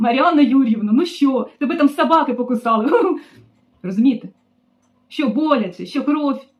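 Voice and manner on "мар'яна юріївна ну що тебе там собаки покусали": loud, mocking, hiccuping through the words. A woman retells her boss phoning her at work; imitating boss hiccuping. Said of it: "і гикаючи отак".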